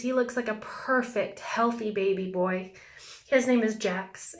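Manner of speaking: choked-up voice, on the verge of crying. Describing photos of a woman's baby boy, choking up, about to cry. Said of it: "sorry, I'm gonna cry".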